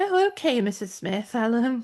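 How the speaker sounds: put-on plummy, posh phone voice. Retelling matching a posh caller on the work phone: posh telephone voice. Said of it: "I used to get somebody really posh on the phone".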